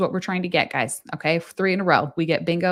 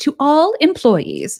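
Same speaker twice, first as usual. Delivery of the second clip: shrill, very high, loud, snooty voice; 9 semitones higher, 7 dB louder than usual. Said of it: "What sounds very snotty?".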